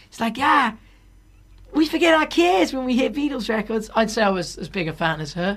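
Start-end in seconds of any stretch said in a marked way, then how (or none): 0.4-3.9 put-on Boston accent, pitched up. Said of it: "like a Boston accent or like a Northeast state".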